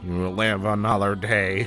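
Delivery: muttered under breath. A player voices his character next to the fire: muttered under breath. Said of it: "Mutter under my breath".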